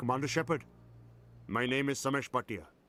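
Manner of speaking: put-on speaking English with an Indian accent. A Mass Effect character introduces himself to the commander, with an Indian accent. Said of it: "it's an Indian accent as well".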